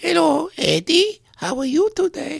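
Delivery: very high, loud, bouncy, swooping sing-song puppet voice. Retelling a ventriloquist's hand-puppet act: Señor Wences impression. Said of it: "and then he would go".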